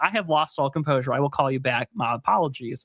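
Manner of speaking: ordinary delivery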